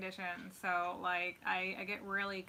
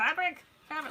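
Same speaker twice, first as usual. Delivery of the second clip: high, loud shrieking screams, repeated over and over; 9 semitones higher, 8 dB louder than usual. Explaining why cuddling with him is hard, imitating screaming. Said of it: "they start screaming".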